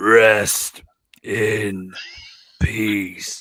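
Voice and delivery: voice dropped very low, very deep and loud. Performing a requested impression for the others: Undertaker impression. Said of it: "shall I do my Undertaker one?".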